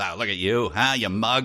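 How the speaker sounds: put-on hard-boiled, old-time pulp detective talk. Acting out a line from old detective stories: old detective story voice. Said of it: "all in the old detective stories".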